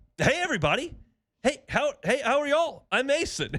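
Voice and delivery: play-acted chirpy, eager, bubbly, very high voice. Retelling a young player walking into a press conference: imitating a bubbly, happy greeting. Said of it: "so bubbly and, like, happy".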